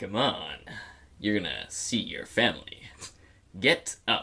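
very deep-pitched voice. Acting a scene, one character urges another to get up, really deep voice. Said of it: "I'm just gonna go really deep".

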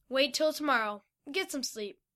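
ordinary delivery

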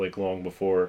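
ordinary talk

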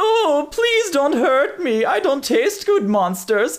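very high, begging, pleading, put-on German accent. Game narrator voices a cowering man begging the players for his life, pleading in a german accent. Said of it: "Is this a German guy?".

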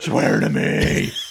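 put-on hoarse character voice.

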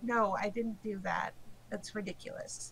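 mock flat delivery. Recounting the group's story, imitating Ellerin's deadpan reply. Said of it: "Ellerin just looks at you deadpan and is like".

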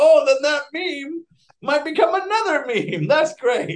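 high-pitched, loud, excited gushing voice.

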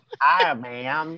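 loud put-on Western accent. Mocking Adam's acting from the episode: imitating Adam's Western voice. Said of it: "his Western voice".

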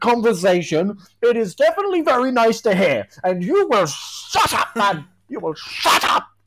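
heated, furious, explosive mild yell. In a parliamentary comedy sketch, addressing mr. speaker, a furious shouting outburst.

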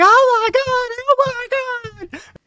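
imitated frantic screaming. Describing a movie scene where he runs down the street, imitating frantic screaming. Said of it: "he's screaming frantically".

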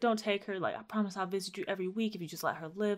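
put-on crying, tearful, pleading tone. Retelling how a woman pleaded at her mother's headstone, imitating someone crying while pleading. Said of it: "And then she starts crying".

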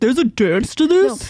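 affected, put-on, incredulous and puzzled tone. Retelling how a friend quoted a kid: imitating a very deep voice. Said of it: "In the deepest voice".

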